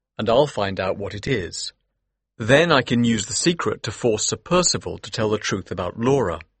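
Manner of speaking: plain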